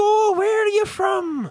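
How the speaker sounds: put-on very high Irish pirate accent. Retelling costumed pirates going around greeting visitors, Irish pirate accent. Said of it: "he spoke like an Irishman".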